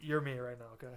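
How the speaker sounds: ordinary delivery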